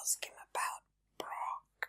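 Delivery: sneaky, hushed whisper. Sneaking behind someone to whisper a suggestion about Brock: whispering. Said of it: "I'd sneak behind you and whisper".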